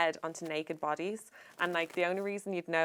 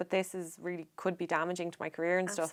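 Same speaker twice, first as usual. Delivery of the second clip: usual speaking voice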